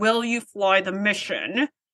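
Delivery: slow voice through gritted teeth. Retelling a scene, playing Jellicoe speaking to Riker, through gritted teeth. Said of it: "through gritted teeth".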